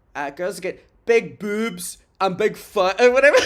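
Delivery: put-on strong, aggressive Scottish accent, laid on hard. Recalling a woman talking about puberty, imitating her in a Scottish accent. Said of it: "like in like a Scottish accent".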